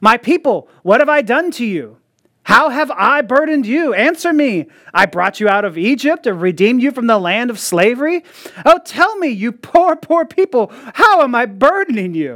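mock sarcastic, accusing, pointed, godlike voice. Reading the Lord's words in a courtroom scene, voicing God with put-on sarcasm. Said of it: "he comes out with some sarcasm".

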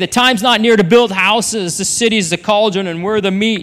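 ordinary talk

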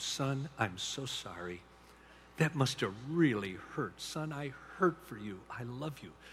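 hushed, barely there, very quiet half-whisper. Retelling how a father comforted his crying son: imitating a half-whisper. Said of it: "I just whispered to him".

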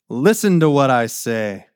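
brimming with self-important pride, proud kingly voice. Speaker reading a king's words to his wives, proud. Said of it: "Can you hear the pride in his voice?".

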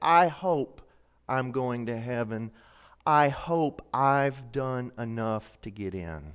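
quiet-voiced, drawn-out words. Retelling what an elderly man answered about heaven: imitating a quiet voice. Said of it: "in a quiet voice".

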